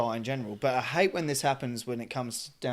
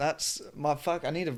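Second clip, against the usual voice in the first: normal talking voice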